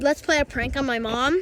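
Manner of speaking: ordinary talk, nothing marked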